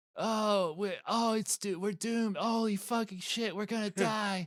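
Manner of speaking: fretful, high, panicky whine. Showing how a shy cartoon boy talks all the time: imitating Cody's panicky whining. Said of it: "He talks like this all the time".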